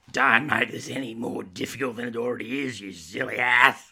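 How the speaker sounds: snarled, snarling voice. Saltine answers the narrator, who has just corrected her, snarling. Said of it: "she snarled".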